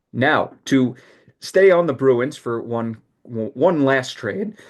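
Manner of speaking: voice cracking on a word. Talking hockey trades with another speaker, moving to one last trade, voice cracking. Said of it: "I don't know why my voice cracked there".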